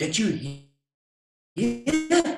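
eager, bursting excitement. Reading Alex's question to his dad as he gets into the car, excited. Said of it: "asked Alex excitedly".

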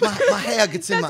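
put-on Southern accent. Joking about a man's hair habit, the speaker quotes him in a put-on Southern accent. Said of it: "Why I went Southern there".

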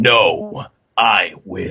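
very low, dropped-down voice. Reading Luffy's defiant reply aloud: lowered Luffy voice. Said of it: "Luffy's voice dropped".

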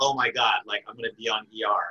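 acted thrilled, super excited, delighted outburst. Retelling hearing about an audition for E R: retelling being super excited. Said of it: "I'd be super excited".

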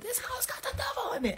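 very high-pitched, full shrieking yell. Telling a true story, the speaker acts out what they screamed: retelling a scream. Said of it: "I was screaming".

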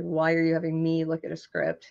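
usual speaking voice

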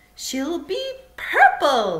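ringing, eager, high, loud cry. Answering Charlie's question about the girl, Mr. Wonka cries out. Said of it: "cried Mr. Wonka".

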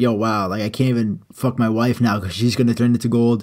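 ordinary talk

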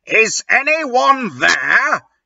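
calling out loudly. Reading a story aloud, the janitor calls out after hearing a cat meow, yelling. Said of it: "Yelled Mr".

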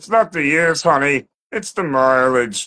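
animated character voice. Quoting a line as a cartoon character, Barney voice. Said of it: "Barney from The Simpsons. It's not actually, this could be Barney or Ray Romano".

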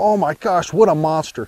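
plain

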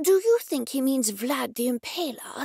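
theatrical stage whisper. A man speaks aside to the narrator in a stage whisper. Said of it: "said to me in a stage whisper".

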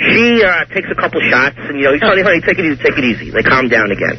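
ordinary talk, nothing marked

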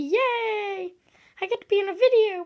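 cheery, drawn-out, happy toy character voice. Showing a small toy of oneself and voicing it: happy toy voice. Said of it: "And look, he's all happy".

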